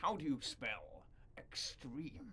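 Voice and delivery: slow, hushed whisper, barely voiced. Retelling a wrestling show opening: Paul Heyman impression. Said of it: "that's my best Paul Heyman impression".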